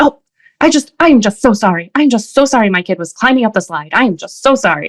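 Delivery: mock, profuse, gushing, repeated delivery. Retelling how a parent at the slide apologized to another parent, mimicking a very loud apology. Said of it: "very loudly".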